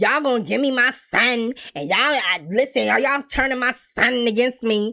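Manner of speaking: sassy, accusing tone with slow, drawn-out attitude. Speaker retelling a mother's words to the family, with mock attitude. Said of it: "She had an attitude like".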